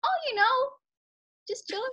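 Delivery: very high-pitched, breezy voice. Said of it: "The octave of my voice is like".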